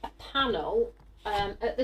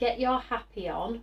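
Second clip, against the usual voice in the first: ordinary talk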